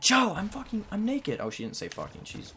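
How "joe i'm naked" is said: piercing, very high scream, acted out. Retelling how the 12-year-old sister screamed on seeing the speaker, imitating a sister screaming. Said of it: "screams at me".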